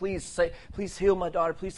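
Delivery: high, pleading, desperate begging. Retelling a bible story, voicing the woman as she begs him: imitating a woman begging. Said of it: "She's begging him".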